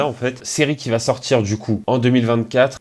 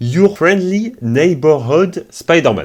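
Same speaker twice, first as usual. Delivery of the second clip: put-on English accent, raised and high; 6 semitones higher, 5 dB louder than usual. Announcing the new title of a Spider-Man animated series, in an English accent. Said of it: "Mon accent anglais".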